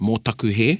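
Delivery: plain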